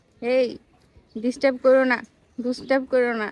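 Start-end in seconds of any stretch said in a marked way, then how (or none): none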